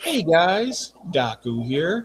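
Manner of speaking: slow, laid-back, mellow, unhurried delivery. Imitating a video creator after praising his mellow voice: imitating Daku's mellow voice. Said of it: "He has just the most mellow voice".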